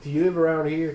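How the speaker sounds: heavy, broad, thick Irish brogue. Retelling a man's question while waiting for a takeout order, in a thick irish accent. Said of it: "thick Irish accent".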